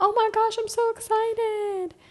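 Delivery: put-on very high, sweet, excited, drawn-out gushing. Imitating how people say it in an endearing way: imitating an endearing excited tone. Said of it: "you say it in a endearing way".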